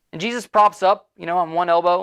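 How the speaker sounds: ordinary delivery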